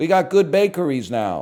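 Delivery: computer-generated voice. Quoting what people keep saying about moving to Charlotte, in a put-on AI voice. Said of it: "I don't know why I'm using the A I voice".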